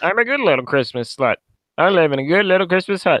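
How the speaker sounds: cartoon frog puppet voice. Speaking a line on someone else's behalf, in a Kermit the Frog impression. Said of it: "I know this isn't the best Kermit accent".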